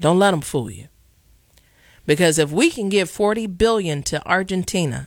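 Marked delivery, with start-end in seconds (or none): 0.0-0.9 put-on Jamaican accent. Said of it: "in my Jamaican voice".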